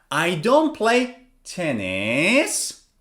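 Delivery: tennis said with a pitch drop, then a rise. Intonation lesson on unfinished sentences: fall-rise on tennis. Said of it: "I come down and then I go up".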